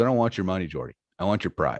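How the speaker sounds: put-on laughing while talking, mock-laughing delivery. Retelling a poker hand, the speaker quotes the other player, imitating laughing while talking. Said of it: "starts laughing. He goes".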